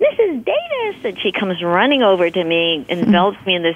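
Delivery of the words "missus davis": play-acted, very high shriek. Years later, a woman spots Mrs. Davis at a convenience store, retelling a shriek. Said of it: "I heard this shriek".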